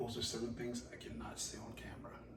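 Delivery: soft, creepy undertone.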